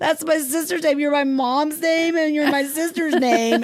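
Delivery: very high, tearful, sobbing voice. Retelling a car accident, repeating her own words to nurses: imitating own past crying. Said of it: "And then I start really crying".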